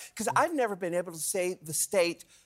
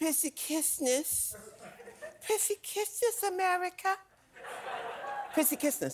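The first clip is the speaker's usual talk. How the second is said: put-on hushed, whispery little kid's voice; 11 semitones higher, 7 dB quieter than usual. Showing the other speaker how the phrase must be said, in a child's voice. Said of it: "you have to say in a child's voice".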